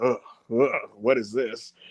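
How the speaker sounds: put-on dismissive, scornful, fed-up groan. Retelling a wrestler rolling her eyes at everything: imitating Lola Vice's eye-rolling disdain. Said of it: "just rolling her eyes at everything".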